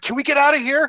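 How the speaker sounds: very high-pitched, freaked-out, panicky urgency. Retelling how she looked around with an arrow ready, acting out her freaking out. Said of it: "she she's freaking out".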